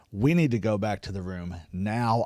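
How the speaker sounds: hushed half-whisper, soft and close. Retelling what a wife told her husband at a concert: imitating a half-whisper. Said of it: "just whispers in his ear".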